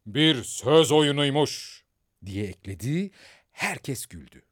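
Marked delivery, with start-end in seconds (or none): 0.1-1.8 hard, stern, harsh raised voice. Narrator reads the king adding a remark to the silent court, harsh voice. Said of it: "Kral sert bir sesle".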